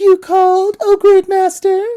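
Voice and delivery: very high, loud damsel or maiden voice. Voicing a monster who answers its master's whistle, imitating the maiden's voice. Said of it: "in the maiden's voice".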